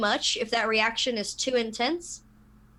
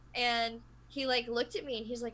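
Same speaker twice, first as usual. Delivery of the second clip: ordinary talk, nothing marked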